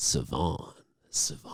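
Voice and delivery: put-on very soft, smooth, suave whispered murmur. Retelling how Noah kept saying Savon most of the time, imitating Noah's very suave way. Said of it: "He was saying it in a very suave way".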